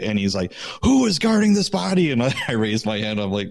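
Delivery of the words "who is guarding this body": harsh drill sergeant bark, very high pitched. Retelling the night inspector's question to the guards, imitating a harsh drill-sergeant inspector. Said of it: "this very harsh, like drill sergeant kind of guy".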